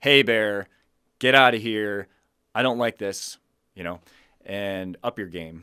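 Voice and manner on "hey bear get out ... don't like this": very loud, firm, assertive no-nonsense voice. Showing what to say when a bear moves toward you: assertive voice. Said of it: "you'll want to have an assertive voice".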